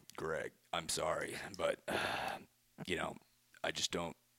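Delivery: low, deep voice with a judging tone. Asked to do your judging voice, speak to Greg in your Batman voice for judging. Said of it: "you do the judging voice".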